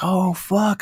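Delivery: giddy exclamation. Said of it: "I was all giddy".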